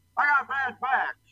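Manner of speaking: squeaky, very high-pitched voice. Discussing an actor playing the Colonel, imitating how he talked: the Colonel's voice. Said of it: "It's tough to do the colonel's voice".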